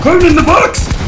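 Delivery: high, loud, excited shout.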